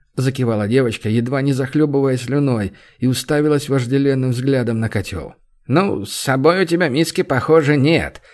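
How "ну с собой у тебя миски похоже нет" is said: derisive, mocking, teasing, needling tone. The owner of a cheap eatery speaks to a drooling girl, mocking. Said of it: "насмешливо произнесла".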